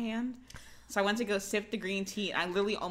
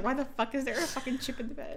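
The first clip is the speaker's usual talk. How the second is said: mock angry, swearing outburst; 6 semitones higher than usual. Retelling how he reacted this morning, imitating him being mad. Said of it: "he was so mad at me this morning".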